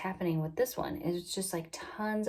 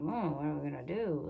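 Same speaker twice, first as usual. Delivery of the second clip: imitated mutter, much quieter; 2 semitones lower, 4 dB quieter than usual. Recalling labor, the speaker repeats what she overheard: imitating a mutter under breath. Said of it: "It was like under her breath".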